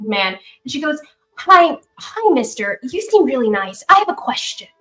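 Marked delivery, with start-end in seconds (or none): 1.3-4.5 put-on sweet, small little girl character voice. Narrating a game, the speaker voices a girl standing next to a man: ten-year-old girl voice. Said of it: "she looks like she's maybe ten years old".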